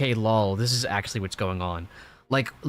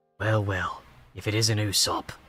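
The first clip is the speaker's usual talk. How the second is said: put-on manga character voice, much lower; 3 semitones lower than usual. Retelling a manga scene, voicing a character who greets another, imitating a manga character. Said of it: "I don't think that's what he sounded like".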